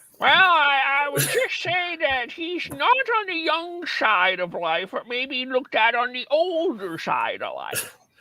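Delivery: very high, sing-song, put-on elderly old man voice. Asked where your old man voice is, answer about the person under discussion in an old man voice. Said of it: "where's your old man voice?".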